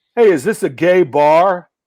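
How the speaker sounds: loud, drawn-out heckler yell. Retelling a club heckler calling out from the dark: imitating a heckler yelling. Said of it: "some guy out of the darkness yells".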